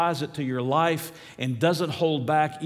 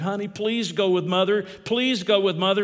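begging, imploring, higher-pitched pleading voice; 5 semitones higher, 4 dB louder than usual. Recalling how a girl's mother would beg her, imitating a pleading mother. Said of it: "Her mother would plead and beg".

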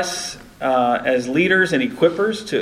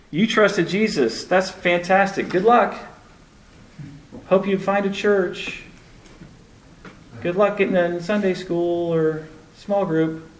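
dry, mocking, sarcastic delivery; 3 semitones higher than usual. Talking about someone who just trusted jesus, saying it sarcastically. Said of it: "I have sarcasm in my throat there".

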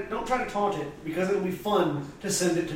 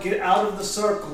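ordinary talk

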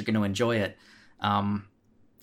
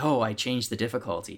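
acted-out sheepish, shamefaced, ashamed tone. Mimicking how someone admitted changing the difficulty: mock-ashamed tone. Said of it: "The tone you were using was almost, like, shameful".

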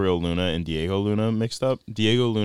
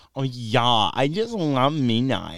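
put-on valley girl voice; 6 semitones higher than usual. Imagining how a man with a cool public facade really talks, in a valley girl impression. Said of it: "like a valley girl".

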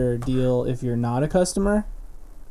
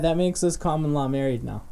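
ordinary talk

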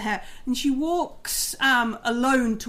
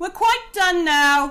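echoing character voice, higher and louder; 8 semitones higher, 6 dB louder than usual. After a quiet moment in the game, voicing Silverhand in an echoing voice. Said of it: "like the echoing voice comes out of Silverhand".

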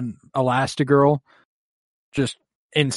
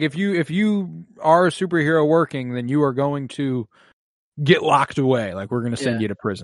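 ordinary delivery

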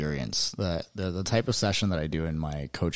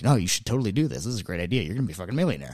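pushy, hard-sell salesman voice; 3 semitones higher than usual. Acting out the conscious voice in your head as a salesman: pushy salesman voice. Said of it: "the pushy salesman in your head".

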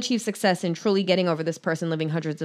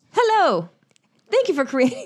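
put-on very high, swooping woman's voice; 12 semitones higher, 4 dB louder than usual. Reading a message aloud on the podcast, the speaker uses a put-on woman's voice. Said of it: "I imagine that's her voice".

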